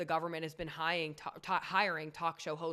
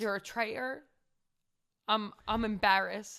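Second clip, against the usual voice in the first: shocked, raised, high-pitched put-on Irish accent; 5 semitones higher, 5 dB louder than usual. Acting out what a woman said on being called a traitor, in an irish accent. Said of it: "Irish. She's Irish, right? Great accent".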